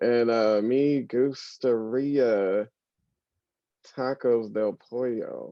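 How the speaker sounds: very slow, halting, broken beginner's Spanish. Retelling ordering tacos without knowing Spanish: imitating slow, halting Spanish. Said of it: "you're just talking through it very slowly".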